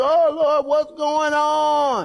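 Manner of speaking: mock anguished cry, high, slow and drawn out. Acting out people crying out to the Lord as the heat rises: imitating someone screaming. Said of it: "we're screaming like".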